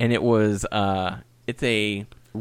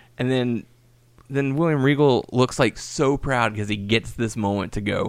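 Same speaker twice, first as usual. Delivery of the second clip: plain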